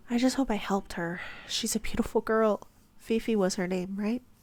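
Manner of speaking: ordinary delivery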